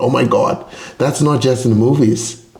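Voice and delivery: ordinary talk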